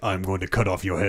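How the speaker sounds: low, hushed, dead flat delivery. Speaker recalling a game scene, quoting Kratos's reply: imitating Kratos's deadpan. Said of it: "Kratos deadpan is like".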